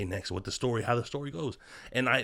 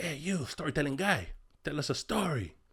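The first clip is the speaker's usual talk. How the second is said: higher-pitched, put-on thick Salvadoran accent; 4 semitones higher, 3 dB quieter than usual. Retelling how the first sergeant asked for a story: imitating a thick Salvadoran accent. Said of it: "He had a super thick accent".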